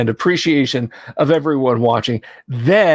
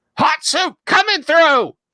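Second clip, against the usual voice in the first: very high, reedy, squawked voice. Voicing a bird-headed cyclist pushing past the group: squawking reedy voice. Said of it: "squawk out in a reedy voice".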